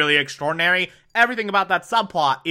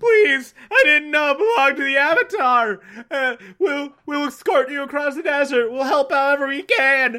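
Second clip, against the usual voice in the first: mock pleading tone, higher pitch; 11 semitones higher than usual. Retelling how a character begs for mercy: imitating begging.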